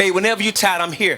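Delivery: ordinary talk, nothing marked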